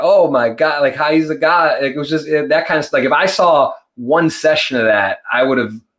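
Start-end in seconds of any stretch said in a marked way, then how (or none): 0.0-1.8 put-on amazed, awestruck commentator gushing. Retelling how the announcers reacted: imitating amazed announcers. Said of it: "in their voice and reaction".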